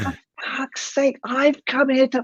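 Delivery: very high, furious, lost-it yell. Recounting losing it at the wind while painting, retelling shouting at the wind. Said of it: "I'm shouting".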